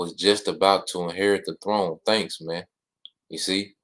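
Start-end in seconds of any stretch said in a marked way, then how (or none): none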